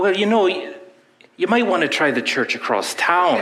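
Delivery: bad Irish accent. Telling a story, voicing the priest answering a threatened churchgoer in a bad irish accent. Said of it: "this is the worst Irish accent you've ever heard".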